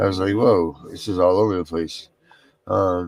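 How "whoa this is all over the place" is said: ordinary talk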